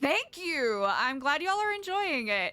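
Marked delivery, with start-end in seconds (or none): 0.0-0.9 aggressive, forceful, hard delivery. Thanking a viewer from chat: aggressive thank you. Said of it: "Why did I say thank you so aggressively?".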